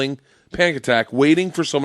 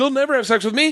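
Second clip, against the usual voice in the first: very high, panicked voice. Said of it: "real panicked".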